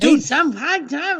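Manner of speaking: mock, very high, unhinged, top-of-lungs screaming. Imitating Hitler's speeches: imitating Hitler yelling. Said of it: "just yelling at the top of his lungs like a crazy person".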